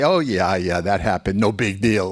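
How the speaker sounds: ordinary talk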